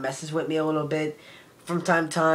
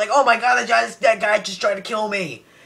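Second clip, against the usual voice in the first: more emotional delivery, much higher pitch; 5 semitones higher, 5 dB louder than usual. Critiquing flat line readings, showing how the line should go, with more emotion. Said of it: "say it with a little bit more emotion".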